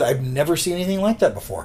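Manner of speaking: usual speaking voice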